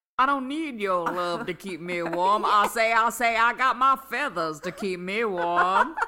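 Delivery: very loud, high, blustering, booming cartoon rooster drawl. Retelling a favorite cartoon scene, doing a Foghorn Leghorn impression. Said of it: "that was a good impression".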